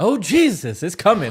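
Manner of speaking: put-on high, loud, drawn-out old church lady voice. Predicting how scared they'll get, imitating an old churchgoing woman.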